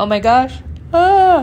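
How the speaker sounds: words spoken through a drawn-out, loud yawn. Telling a story about a cashier and yawning mid-sentence herself: yawning. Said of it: "Okay, that was a yawn".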